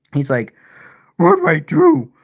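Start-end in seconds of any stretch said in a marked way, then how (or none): 1.1-2.0 clumsy cartoon dog voice, sing-song with swooping pitch. Joking that Scooby was kicked off the show: bad Scooby-Doo impression. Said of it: "I can't do a good Scooby impression".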